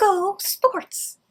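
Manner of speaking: put-on high-pitched, quirky girl's cheer. Acting out a quirky girl at a football game: quirky girl cheering. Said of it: "a quirky girl at a football game saying".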